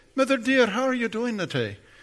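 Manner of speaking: put-on Scottish accent. Retelling how he greeted his mother, fake Scottish accent. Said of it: "anytime I would speak with my Scottish accent, my fake one, I'd say".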